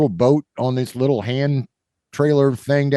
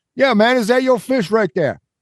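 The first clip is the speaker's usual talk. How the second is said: bad, mangled New York accent, pitched up; 9 semitones higher than usual. Retelling a man at the water's edge asking about a fish, butchered New York accent. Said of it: "I am butchering the New York accent".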